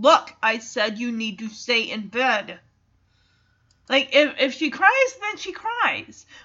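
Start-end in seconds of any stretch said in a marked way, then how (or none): 0.0-2.6 firm, stern, no-nonsense parent voice. Advising on putting a child back in bed, firm parent voice. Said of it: "use your parent voice".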